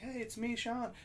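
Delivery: high, soft, timid voice.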